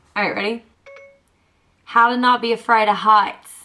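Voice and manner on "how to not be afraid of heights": bad fake Australian accent, louder. Asking a voice assistant a question, in the worst Australian accent. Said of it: "It's the worst Australian accent".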